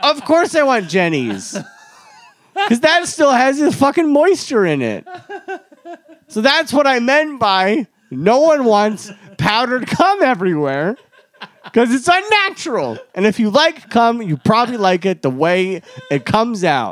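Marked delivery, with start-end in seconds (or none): 6.3-16.9 loud raised voice, yelling and shouting. A podcast host argues a point to the co-hosts, yelling. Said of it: "Stop yelling at me".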